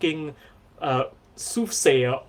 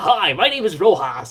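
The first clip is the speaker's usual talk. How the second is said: imitated American accent; 2 semitones higher, 5 dB louder than usual. Mimicking Filipinos who speak with an American accent, put-on American accent. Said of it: "They're all like".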